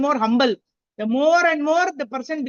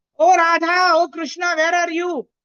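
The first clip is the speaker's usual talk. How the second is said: put-on loud, searching shouting call-out; 4 semitones higher, 3 dB louder than usual. Explaining a verse, the speaker acts out its cry, shouting in a loud voice. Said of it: "shouting in loud voice".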